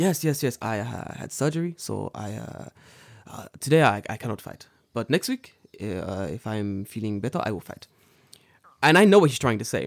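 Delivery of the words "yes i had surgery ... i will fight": mock soft-spoken man voice, slower. Retelling a man calling off their fight after surgery, imitating Kaoru-san, soft-spoken. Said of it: "he's a very kind, soft-spoken man".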